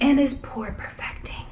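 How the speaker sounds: quiet whispered aside.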